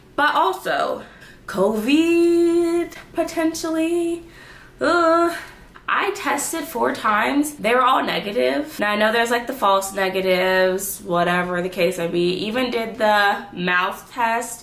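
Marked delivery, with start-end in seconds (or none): 0.2-7.6 breathless, winded, pitched-up talking. Having just walked off the stairs, talking about possibly having covid, out of breath. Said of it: "I just walked off the stairs out of breath".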